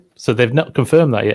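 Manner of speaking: ordinary talk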